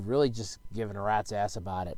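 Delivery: flat, low and soft. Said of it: "and D".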